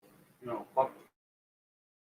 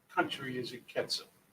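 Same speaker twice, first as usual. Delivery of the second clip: ordinary talk, nothing marked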